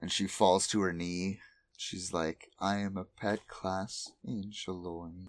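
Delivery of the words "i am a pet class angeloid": put-on sad voice, quieter and slower. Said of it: "It's all sad and shit".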